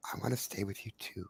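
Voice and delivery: whispered very quietly, breathy, barely audible. Telling Reggie about a little voice in his head, whispering as Whisper. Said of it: "she literally whispers in your head".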